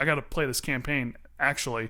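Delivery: ordinary talk, nothing marked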